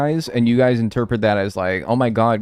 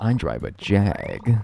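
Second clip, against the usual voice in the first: very slow speech, every word drawn out; 2 semitones lower than usual. Joking about a tattoo reading Jag: Jeremy Clarkson voice. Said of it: "Jeremy Clarkson voice".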